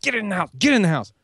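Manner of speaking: play-acted urgent, fast, hurried shouting. Retelling a rushed morning, calling the dogs in: retelling yelling at dogs. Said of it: "I was yelling at them like".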